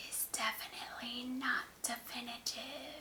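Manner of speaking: hushed, creepy, spooky scary voice. Signing off a reaction video, thanking viewers, in a scary voice. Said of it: "That was my scary voice".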